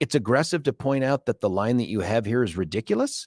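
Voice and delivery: plain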